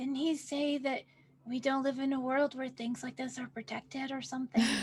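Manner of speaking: half-whispered voice. Leaning over to Haiku in the game and asking: half-whispering in character. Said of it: "I lean over to Haiku and I whisper".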